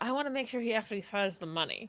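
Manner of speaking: quiet, hushed half-whisper. Half-whispering in character to a companion about the money: half-whispering to a companion. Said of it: "And then I whisper to Noor".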